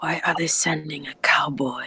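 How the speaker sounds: polite, perturbed, leaned-in hushed whisper. Acting out a character leaning in to speak politely, with a leaned-in whisper. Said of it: "lean in and, and whisper".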